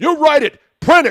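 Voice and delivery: very loud, high, enraged furious screaming rant. Retelling an angry player's rant after a game: imitating someone screaming. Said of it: "he's screaming".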